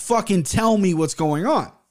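put-on freaking out. Retelling what they yelled at him while driving, retelling own freak-out. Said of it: "I'm freaking out".

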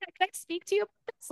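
high, fast, squeaky little mouse voice. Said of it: "whatever that voice was that you just did".

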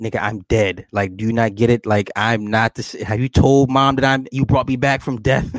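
ordinary talk

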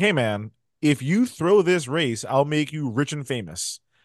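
ordinary talk, nothing marked

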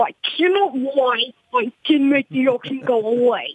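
gooey, slimy, big creature character voice. Showing how a character from a written story sounds: slimy big booger voice. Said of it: "a slimy, big booger would sound like".

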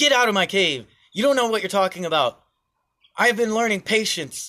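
mock angry shout, high. Retelling a parable where the cave monk loses his cool: imitating an angry shout. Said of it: "the cave monk loses his cool".

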